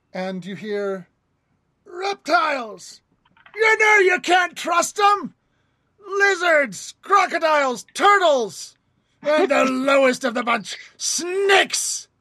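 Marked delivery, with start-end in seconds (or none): 1.8-12.0 shrill, booming, very loud rant over crowd noise. A game master voicing Aku, heard over a crowd: Aku shouting over a crowd. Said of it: "hear Aku over the crowd".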